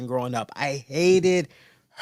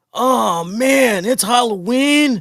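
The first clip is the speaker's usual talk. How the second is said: put-on flustered panic, higher and louder; 8 semitones higher, 6 dB louder than usual. Retelling a homeowner caught without candy at Halloween: imitating a flustered homeowner. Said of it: "homeowner caught without Halloween candy".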